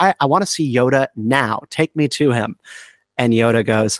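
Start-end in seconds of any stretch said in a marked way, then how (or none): none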